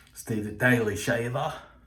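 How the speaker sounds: terrible, weak put-on Australian accent. Speaker credits a viewer who told him about a razor: bad Steve impression. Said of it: "Terrible impression".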